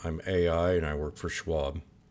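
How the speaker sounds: lifeless, flat, emotionless robotic machine monotone. Playing an AI who works for Schwab, with a flat, emotionless delivery. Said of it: "I made sure that I had no emotion".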